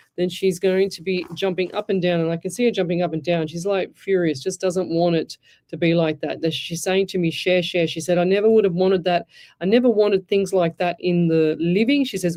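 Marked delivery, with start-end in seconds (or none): none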